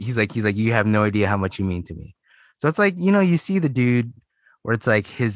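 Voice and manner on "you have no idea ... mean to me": mock crying, tearful and pleading. Retelling how a young fan reacted on meeting a comedian: imitating someone crying. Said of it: "the guy starts crying".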